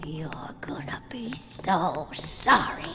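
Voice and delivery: slow, creepy, threatening whisper.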